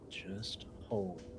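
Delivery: very soft, hushed, breathy whisper. Answering a character's warning in the game: whispering. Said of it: "whisper to him".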